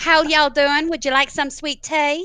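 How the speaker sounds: put-on, high-pitched American accent. Taking turns trying out accents, the speaker attempts an American accent. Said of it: "attempt at an American accent".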